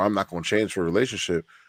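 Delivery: ordinary talk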